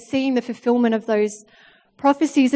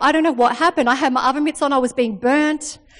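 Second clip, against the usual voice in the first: plain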